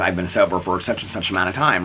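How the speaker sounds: ordinary talk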